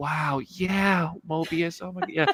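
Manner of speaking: slow voice with every word drawn out. Imagining the character talking to Mobius in a scene: Tom voice. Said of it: "that Tom voice and, and, and movement".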